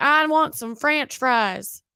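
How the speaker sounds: put-on Southern Midwest accent, laid on thick. Joking about how the word french sounds: thick southern midwest accent. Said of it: "Southern Midwest accent trying to say French".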